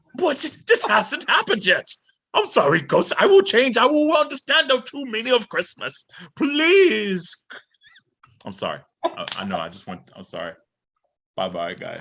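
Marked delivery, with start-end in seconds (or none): 0.2-7.4 pleading in a very high voice. Acting out a scene from A Christmas Carol, pleading to the ghost: Ebenezer Scrooge voice. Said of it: "that was very Christmas Carol, like, when Ebenezer Scrooge".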